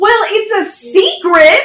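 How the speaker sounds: very high, very slow, drawn-out shout. Retelling how someone watching with them yelled back at the tv: retelling a yell at the tv. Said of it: "like basically yells at it".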